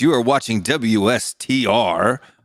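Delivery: slow on-air announcer delivery. Hosting a preview show, showing off a radio voice. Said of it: "This is my radio voice".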